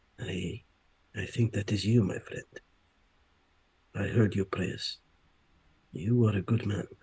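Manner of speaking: quiet, hushed, confiding delivery. Addressing a friend, in a low hushed voice. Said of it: "in a low voice, in a hushed voice".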